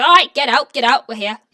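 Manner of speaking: very loud, haughty, bossy barking voice. Voicing a haughty dwarf guard ordering prisoners out of a wagon: haughty dwarf prodding prisoners out. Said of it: "this haughty-looking dwarf ... starts prodding it at you guys like".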